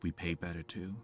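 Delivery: muttering quietly under her breath. Voicing a smirking character's dig at the Academy: muttered under her breath. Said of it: "under her breath".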